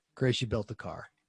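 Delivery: put-on, low, defeated, hopeless dejected voice. Retelling his reply when chris called about the temperature, in a put-on dejected voice. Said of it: "I put on my dejected voice".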